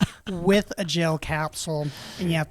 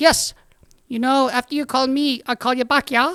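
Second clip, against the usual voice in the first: put-on higher-pitched little boy voice; 8 semitones higher, 4 dB louder than usual. Telling a classroom joke, voicing a little Filipino boy. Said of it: "the little Filipino boy goes".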